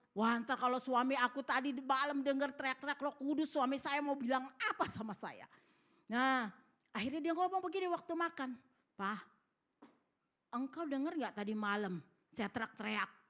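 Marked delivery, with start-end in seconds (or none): none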